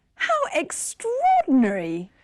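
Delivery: astonished, voice soaring high and swinging. Showing on an English program how more surprise sounds, in an extra high surprised voice. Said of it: "your voice goes even higher".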